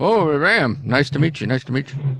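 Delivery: muffled full-mouth speech. A character who is still eating greets a newcomer: talking with mouth full. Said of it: "He's got food in his mouth".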